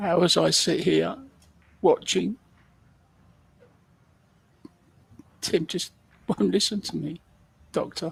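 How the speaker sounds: high, emotional, theatrically upset voice. Speaker mock-complains to an imagined doctor that another person won't listen, mock-emotional. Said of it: "Mark is getting emotional".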